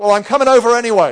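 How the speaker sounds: high, loud, fast, cheerful call.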